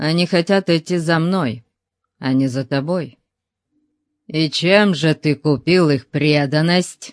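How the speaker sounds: usual speaking voice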